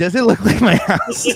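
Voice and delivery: very high-pitched put-on movie character voice. You do impressions for the folks, announcing each one first, now a Quentin Tarantino in Pulp Fiction impression. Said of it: "Here's my impression of Quentin Tarantino in Pulp Fiction".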